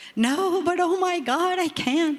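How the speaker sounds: very high, tearful crying voice. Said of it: "I'm crying".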